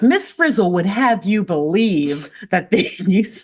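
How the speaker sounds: confident speaking voice. Retelling a courtroom opening statement by Keisha: imitating confident Keisha. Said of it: "She's so confident".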